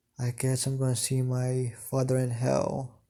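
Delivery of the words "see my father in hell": plain reading voice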